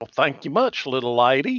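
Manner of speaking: overdone, laid-on, exaggerated Western accent. Playing a character who always talks in an exaggerated western accent. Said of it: "always talk in an exaggerated Western accent".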